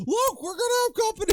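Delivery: sudden, very high, panicked freak-out, acted out. Quoting a character who shoots the thing: imitating someone freaking out. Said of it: "then he just freaks out".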